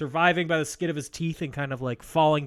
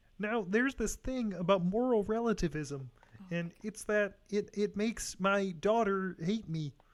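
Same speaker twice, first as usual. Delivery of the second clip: high, slow, frog-like puppet voice impression; 6 semitones higher, 7 dB quieter than usual. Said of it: "doing my Jordan Peterson impression".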